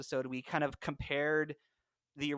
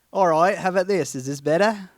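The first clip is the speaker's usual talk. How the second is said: very loud fake British accent drifting Australian; 4 semitones higher, 14 dB louder than usual. Retrying a British accent after being told it failed: bad British accent. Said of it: "That is actually a little Australian".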